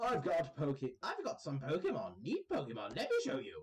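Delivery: animated, swooping, sing-song character voice with wide pitch swings. Voicing a trainer in a game who offers to show his Pokemon: Super Nerd Dalton voice. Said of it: "I don't know why I gave him that voice".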